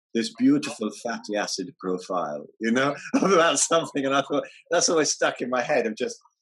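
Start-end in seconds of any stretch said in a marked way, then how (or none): 0.1-2.4 put-on Russian accent, slower. Recalling a woman's video, the speaker quotes her in a Russian accent. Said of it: "in that Russian accent".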